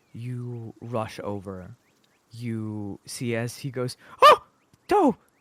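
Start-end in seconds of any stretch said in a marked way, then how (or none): 4.2-5.1 very high, loud, frightened, startled yelp. Voicing a wounded satyr as someone rushes over: startled, scared exclamation. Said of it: "did I scare you?".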